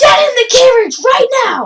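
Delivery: very high, very loud shrieking scream at full volume. In the game, a player's character screams at the ogre. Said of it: "I'm screaming at the ogre".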